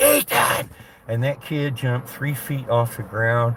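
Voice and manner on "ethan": put-on very high, piercing, sudden scream. Retelling how a welder crept up on a grinding kid: imitating a scream. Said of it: "walked up behind him and just screamed".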